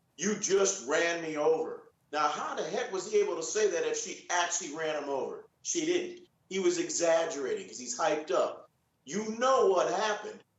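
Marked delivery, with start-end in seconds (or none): none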